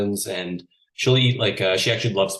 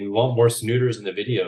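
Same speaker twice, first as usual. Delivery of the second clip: normal talking voice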